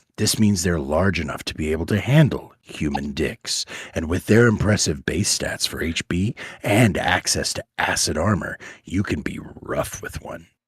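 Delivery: very seductive, low, sultry voice. Reading a text aloud after offering to give their most sultry voice. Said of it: "Can I can I give you my most sultry voice?".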